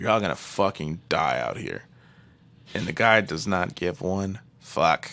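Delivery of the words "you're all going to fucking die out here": mumbling under the breath, lower and quieter. Retelling a film scene where a character mutters a threat: imitating a mumble under the breath. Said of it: "Wendy kinda mumbles, like, under her breath".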